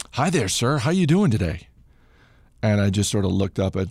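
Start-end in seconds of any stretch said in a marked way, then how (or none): 0.1-1.7 acted-out, very calm and cheerful sing-song. Retelling a medic greeting the exhausted runner: imitating a calm, cheerful voice. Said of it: "just as calmly and cheerfully as you can possibly imagine".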